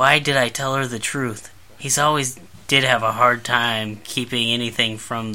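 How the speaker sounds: plain reading voice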